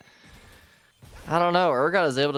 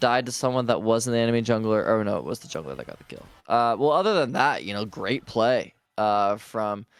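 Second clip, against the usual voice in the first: sarcastic tone. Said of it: "sarcasm in your voice".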